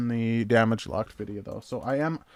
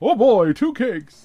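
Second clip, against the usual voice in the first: goofy put-on voice, very high and loud; 11 semitones higher, 11 dB louder than usual. Reading a viewer message aloud: funny put-on reading voice. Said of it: "read it in that kind of a voice".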